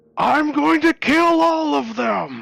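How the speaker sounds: very high, rasping, mechanical, berserk yell. A narrator voices a mechanical monstrosity going berserk in a crater: Blade yelling. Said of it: "And it yells out in a familiar voice".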